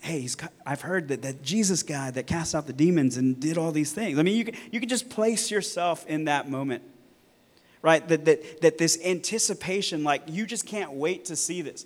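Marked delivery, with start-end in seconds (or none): 0.0-4.2 mock whispering voice. Picturing crowds awaiting Jesus, imitating people whispering. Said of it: "they're whispering to one another".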